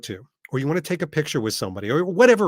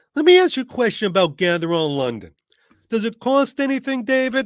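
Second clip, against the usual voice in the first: put-on New Jersey accent with raised pitch; 7 semitones higher, 4 dB louder than usual. Acting out Frank from New Jersey questioning David about an event, imitating Frank from New Jersey. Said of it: "Frank from New Jersey".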